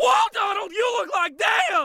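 very high, very loud top-of-lungs shriek. Recounting a scene, acting out Bill Farmer screaming at Donald: retelling Bill Farmer's scream. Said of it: "literally screaming at the top of his lungs".

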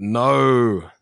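high-pitched loud yelling.

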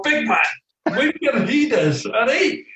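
barked sharply in a high-pitched Scottish accent.

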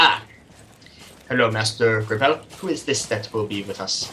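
put-on elderly butler voice. Voicing the butler who greets the players at the door: old butler voice. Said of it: "sort of a bald old butler type thing".

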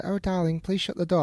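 play-acted gentle prim tone. Contrasting how one speaks on the podcast, mock gentle tone. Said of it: "that's not how gently, gently I speak".

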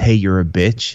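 ordinary talk, nothing marked

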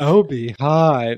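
attempted sultry character voice that falls a bit short. Trying a better catchphrase after rating an impression: Austin Powers voice. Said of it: "I can't do, like, his, like, sultry".

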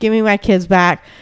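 ordinary talk

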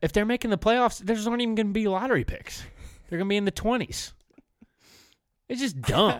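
very high yelling. Ranting to another speaker about a basketball trade: yelling. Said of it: "What are you yelling at me?".

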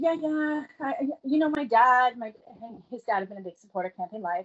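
normal talking voice

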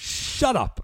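very high-pitched, exasperated, fed-up outburst. Describing an episode, imitating Sasuke yelling. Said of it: "just yells".

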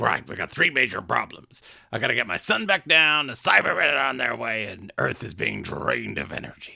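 put-on crusty, salty, weathered old voice with whiskey-salt rasp. Recapping an episode, voicing the character's lines: Cutler voice. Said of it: "I don't know why I'm doing his voice".

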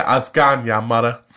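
put-on strong Cumbrian accent. Speaker mimicking how a woman talks to her: strong Cumbrian accent. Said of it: "I go super Cumbrian".

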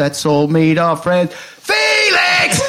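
high-pitched shouting. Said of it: "I just shout".

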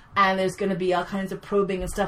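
ordinary talk, nothing marked

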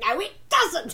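re-enacted yell. Recounting a reader's comment on her accent, speaker retells shouting at her computer. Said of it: "I'm shouting at my computer going".

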